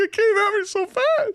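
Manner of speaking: very high, strained, drawn-out little voice. Speaker retells answering their dad after the ball hit them: retelling in a higher voice. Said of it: "With a higher voice because it hit me in the junk".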